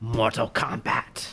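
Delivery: breathy, whispered, breathed-out delivery. Retelling a movie scene, imitating Raiden. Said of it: "And Raiden be like".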